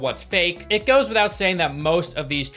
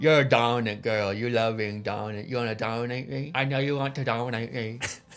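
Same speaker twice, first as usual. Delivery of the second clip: put-on voice, much lower and quieter; 7 semitones lower, 4 dB quieter than usual. Recapping a show, the speaker acts out a man talking to Huda: mimicking how he said it. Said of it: "But he does it like this".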